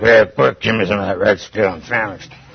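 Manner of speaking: deep, low, beastly animal-like voice. Reading the Bible story, imagining Esau's words to Jacob, in a beast voice. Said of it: "Beast voice".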